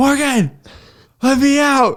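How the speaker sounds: mock shrill, very high, slowly drawn-out scream. Retelling how a man locked in a cage called his wife: imitating someone screaming. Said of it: "screaming for, uh, his wife".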